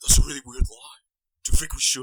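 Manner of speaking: storybook-style reading, like an audiobook narrator. Retelling a story by imitating the audiobook: imitating the audiobook narration. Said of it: "me doing an, an impression of the audiobook".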